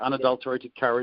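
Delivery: normal talking voice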